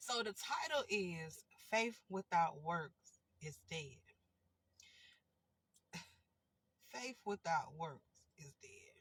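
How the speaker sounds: serious reading, stifling giggles, straining to stay serious. Speaker announcing the title of a video, holding back a laugh. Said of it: "I'm trying not to laugh at myself".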